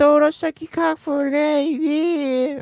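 imitated Boston girl's accent. Mocking how girls in Boston talk, the speaker does a Boston girl impression. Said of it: "That's your impression of a Boston girl?".

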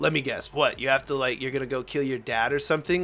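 ordinary talk

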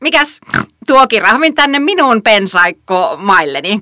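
grunting voice. Narrator voices the bush pig greeting the giraffe, in a grunting voice. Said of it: "Röhkivällä äänellään pensassika tervehti kirahvia".

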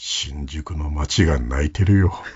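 very deep, very slow, drawn-out put-on voice. Trying the low voice first and imagining a line: put-on deep voice. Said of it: "あ低い声、低い、まず低い方よね".

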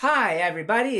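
put-on weird, odd-sounding Eastern European accent. Retelling how a cartoon doctor greets people: Doctor Nick weird Eastern European accent. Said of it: "in his weird, what part of Eastern Europe is that supposed to be, accent".

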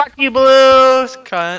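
shrieking, very high and very loud. During a game with others on mic, the speaker is screaming. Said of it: "Yeah, I screamed".

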